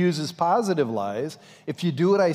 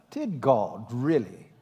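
put-on English accent, sounding learned; 4 semitones lower, 3 dB quieter than usual. Explaining how his lies are fashioned, the speaker quotes him in an English accent. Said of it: "he says it with that English accent".

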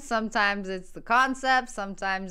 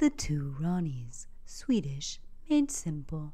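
low, measured sat-nav announcer voice; 7 semitones lower, 6 dB quieter than usual. Video host bringing back a bit before welcoming viewers: GPS voice. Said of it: "Thought I'd bring back my GPS voice".

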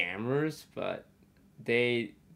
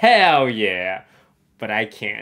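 put-on, very loud, drawn-out, full-on eager enthusiasm; 10 dB louder than usual. Retelling a reply to a street scammer: imitating Michael's full enthusiasm. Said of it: "full enthusiasm".

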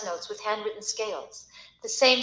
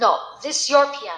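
resolute, no-nonsense, firm and raised; 7 dB louder than usual. A mother answering her child's shy question, firm. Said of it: "she said firmly".

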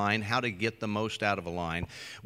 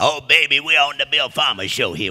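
very loud, put-on on-air radio DJ voice; 4 semitones higher, 9 dB louder than usual. Bringing in a guest DJ character on the air: Wolfman Jack DJ voice. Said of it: "I do like Wolfman Jag".

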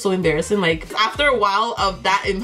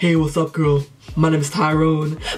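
deepest, low, male-sounding put-on voice; 5 semitones lower than usual. Showing the voice that made people think she was a guy, put-on deep guy voice. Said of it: "I could do the deepest voice you will ever hear in life. ... I can still kind of do it".

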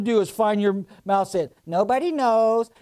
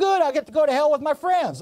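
high, jeering, mocking taunt; 6 semitones higher than usual. Preaching on the street, retelling a man who mocked the speaker, imitating a mocking taunt. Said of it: "he's standing there mocking me".

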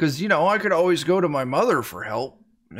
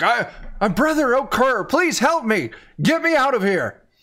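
smothered, muffled speech in a high-pitched voice; 8 semitones higher, 3 dB louder than usual. Voicing a captive shaken inside a sack: muffled voice from inside a sack. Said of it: "you hear the muffle".

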